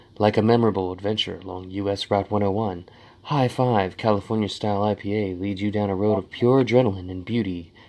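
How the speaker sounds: sexiest possible voice, low, sultry and seductive. Reading the description on a can aloud, sexiest voice possible. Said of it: "I'll say this in my sexiest voice possible".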